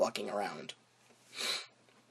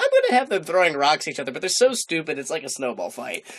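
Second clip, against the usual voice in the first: plain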